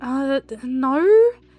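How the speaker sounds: put-on baffled, uncomprehending, dumbfounded, hesitant delivery. Retelling refusing a stranger's offer: retelling a dumbfounded reply. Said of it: "just a complete not able to comprehend".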